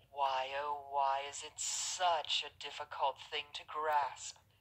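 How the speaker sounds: mocking, scornful, high-pitched put-upon lament. A character mocks an argument she has heard again; mocking lament. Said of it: "lamented mockingly".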